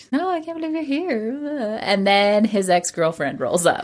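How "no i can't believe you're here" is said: acted-out smitten, lovestruck swoon. Retelling a plot where he shows up for moral support: mock swooning. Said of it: "And she's like swooning".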